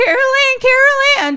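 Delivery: acted, very high, frantic, drawn-out panicked calling. Retelling a movie scene, the speaker acts out Robbie calling Carol Ann, imitated panicked calling. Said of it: "And he's like freaking out".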